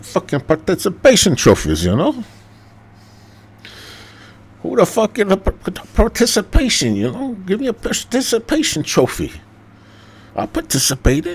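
attempted Mexican accent. Talking to listeners about upcoming episodes, switching into a put-on mexican accent. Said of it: "I don't know if that was really Mexican or not".

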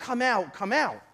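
ordinary delivery

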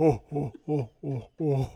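slow monstrous laugh. Host at Christmas doing his Santa-meets-Jabba bit: Jabba the Hutt Santa laugh. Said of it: "my Santa Claus meets Jabba the Hutt".

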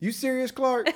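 solemn, dead-serious, fully earnest, very high voice. Retelling a favorite movie quote as Eddie, dead serious. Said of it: "as serious as he can be".

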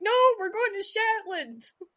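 loud, high-pitched crowd yell. Retelling a flight, voicing the whole plane yelling back at the pilot. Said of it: "the entire plane yells back".

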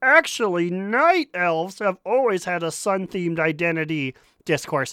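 deliberately dumb-sounding, dopey voice. Speaker reads out a commenter's words to co-hosts, mocking them in a dumb voice. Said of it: "supposed to be in a dumb voice".

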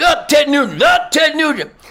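play-acted very high, violent, angry screaming. Retelling an angry stranger's outburst at a booth: imitating someone screaming. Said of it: "violently threatening and screaming".

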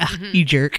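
sarcastic, tossed-off little jab. Showing how a TV character says the phrase: imitating Suzanne, mock sarcastic. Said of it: "she kind of being like".

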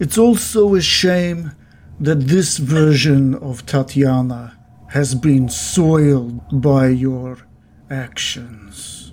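acted vampire lord villain voice. A game master speaks as the vampire villain to the players: game master voicing vampire villain. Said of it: "he's looking way more more like a vampire than ever before. His teeth are way more pointed. His cheeks are more sunken, and now you're seeing these dirty claws on the end of his fingernails. / he's lo".

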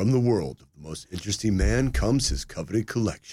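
commercial announcer voiceover read. Retelling a line from a commercial once voiced: commercial voiceover voice. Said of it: "It was like".

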